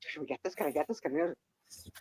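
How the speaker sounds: barely audible whisper under the breath. Retelling two people asking if they can get this, imitating a whisper.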